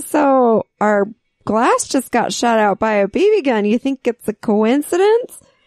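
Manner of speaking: ordinary talk, nothing marked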